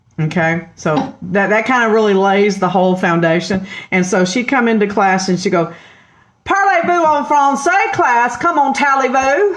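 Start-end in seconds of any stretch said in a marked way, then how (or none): 6.5-9.6 put-on French words spoken in a Texas accent. Recalling a teacher coming into class and greeting everyone, imitating Miss English's Texas accent. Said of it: "a teacher that had a Texas accent".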